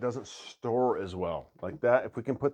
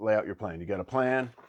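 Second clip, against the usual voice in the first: ordinary talk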